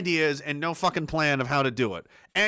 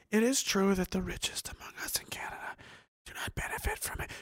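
put-on frightened little-girl voice, higher and quieter; 4 semitones higher, 8 dB quieter than usual. Quoting what the minister said, as a listener mocks it: mock-frightened little-girl voice. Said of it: "You're talking like a frightened little girl".

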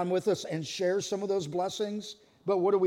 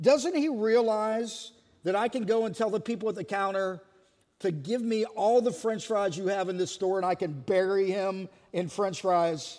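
normal talking voice

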